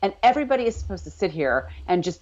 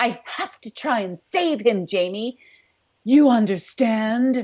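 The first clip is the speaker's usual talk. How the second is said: huffy, affronted, indignant tone; 3 semitones higher than usual. Retelling a scene by quoting Claire: imitating indignant Claire. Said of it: "Claire's all indignant at this point".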